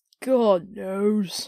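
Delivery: yawning, spoken mid-yawn. Among gentlemen discussing a man's death, one answers a question, yawning. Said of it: "said the first with a yawn".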